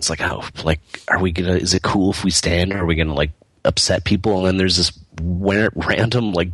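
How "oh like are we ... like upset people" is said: ordinary delivery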